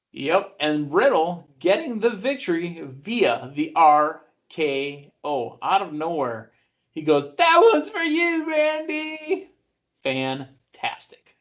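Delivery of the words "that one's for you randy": very high voice with the word stretched long. Retelling what Matt Riddle said after his win: Matt Riddle impression. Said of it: "You do a great impersonation".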